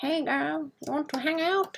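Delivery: high, slow, drawn-out cartoon skeleton voice. Imagining a skeleton flirting with someone: Skeletor's voice. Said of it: "Skeletor's voice".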